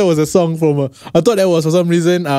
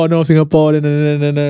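ordinary delivery

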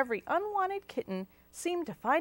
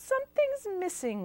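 murmured, half to self, pitched-up; 8 semitones higher than usual. Narrating a story, a character styling someone's hair remarks: murmuring. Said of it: "Watilda murmured".

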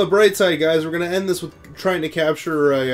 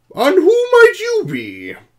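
put-on high, loud, swooping old man voice; 7 dB louder than usual. Doing lines as the character old man Fuji: Fuji old man voice. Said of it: "I get to do my old man voice".

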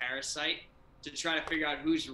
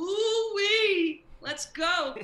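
put-on creature voice, higher and louder; 7 dB louder than usual. Acting out the creature answering a request to clean a room: Mr. Meeseeks voice. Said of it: "He's like".

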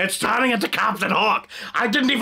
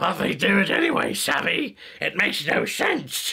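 slight put-on pirate captain voice. Voicing a mixed character that came out a little like Captain Hook. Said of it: "it still got a little Captain Hooky in there".

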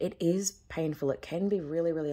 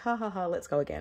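put-on sarcasm with mock laughter; 3 semitones higher than usual. Speaker quotes what they jokingly say to spirit: retelling a sarcastic joke. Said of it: "And I say that very jokingly, with a little bit of sarcasm".

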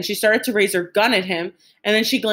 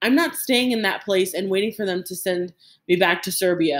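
ordinary delivery, nothing marked

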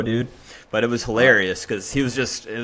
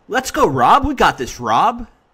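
mock cheer, very high-pitched, yelled; 9 semitones higher than usual. Retelling a men's doubles match, imitating James yelling. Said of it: "James just like starts yelling".

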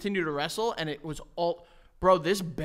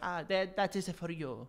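exaggerated Italian accent; 7 dB quieter than usual. Imagining Saint Anthony handing back a lost thing: stereotypical Italian voice. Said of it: "I got my stereotypical Italian voices down".

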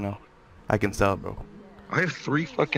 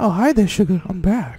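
put-on woman's voice, much higher pitch; 10 semitones higher than usual. Asked during a group game to do a female impression: female voice impression. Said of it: "give me your female impression".

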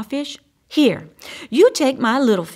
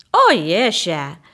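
taunting, needling, mocking tone; 3 semitones lower, 3 dB louder than usual. Crawfish replies to Crab, mocking. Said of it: "replied Crawfish mockingly".

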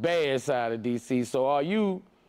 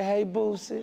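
mock kissy intimate tone, higher; 6 semitones higher than usual. Repeating another speaker's greeting back to her: imitating a kissy greeting. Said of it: "I like how you said".

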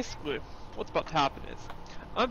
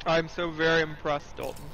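ordinary talk

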